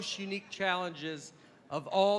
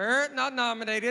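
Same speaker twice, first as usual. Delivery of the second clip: put-on parrot voice, much higher; 5 semitones higher, 4 dB louder than usual. Mid-story about presenting at the Golden Globes, a parrot interjects, in a parrot voice. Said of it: "in a parrot's voice".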